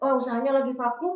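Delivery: normal talking voice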